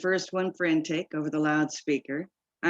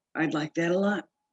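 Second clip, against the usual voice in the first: hoarse, husky whisper. A man answers the narrator's offer to let him call her, hoarse whisper. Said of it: "he whispers hoarsely".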